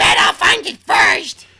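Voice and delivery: put-on high, slow girl's voice. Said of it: "I'll be Dina".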